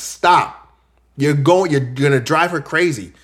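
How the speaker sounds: acted stern, scolding-sounding voice. Retelling how he told a woman to calm down, retelling being stern. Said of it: "I was like really stern with her".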